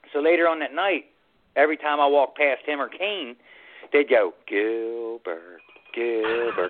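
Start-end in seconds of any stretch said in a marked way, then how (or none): 4.4-6.7 muttered, taunting, lower and quieter. Retelling how two people teased the speaker, imitating their under-the-breath taunt. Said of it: "like under their breath".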